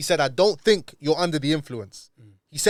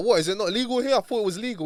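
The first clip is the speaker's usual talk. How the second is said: mock, high, clueless innocent confused tone; 6 semitones higher than usual. Retelling a police stop, acting oblivious to the officer: retelling acting oblivious. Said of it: "I started playing ignorant".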